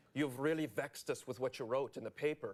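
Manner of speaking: put-on thick, heavy, laid-on Irish accent. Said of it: "this heavy Irish accent".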